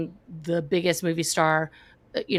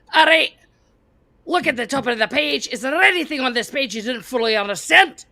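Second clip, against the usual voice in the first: high, dead serious fake Scottish accent; 8 semitones higher, 4 dB louder than usual. Retelling how a girl from Scotland led a pre-session: put-on Scottish accent. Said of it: "Is this Mike Myers?".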